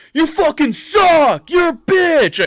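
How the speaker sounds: put-on shrill, loud drunken screaming, pitched way up. Imitating a drunk office worker screaming insults: imitating a drunk person screaming insults. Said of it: "somebody was in there drinking and going".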